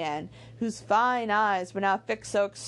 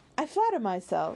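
ordinary delivery

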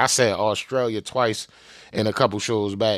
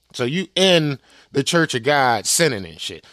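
normal talking voice

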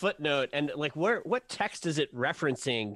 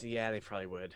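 muttered very softly, lower and quieter; 7 semitones lower, 10 dB quieter than usual. Voicing a character who grumbles after swearing: muttering under his breath. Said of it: "he swears under his breath".

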